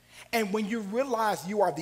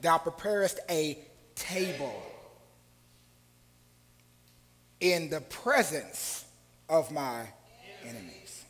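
deliberate word-by-word pacing, slow, low, halting; 4 semitones lower than usual. Preaching on Psalm 23, the speaker repeats the verse to the audience: said slowly. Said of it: "Let's say this slowly".

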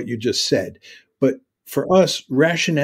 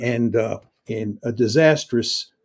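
ordinary delivery

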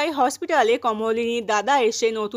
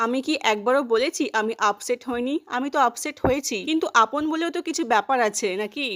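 plain

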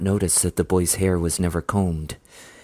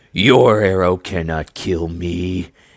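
slow, snarling beastly monster voice; 4 dB louder than usual. A bear walker monster taunts a hunter aiming his bow at it, snarling. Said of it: "it snarled up at him".

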